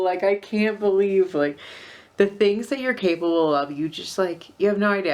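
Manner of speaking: teary, near-crying, rushed outpouring. Recalling pushing through anxiety on a trip, tearing up. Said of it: "I'm tearing up".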